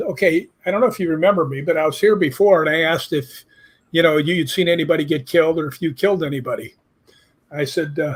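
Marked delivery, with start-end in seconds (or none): none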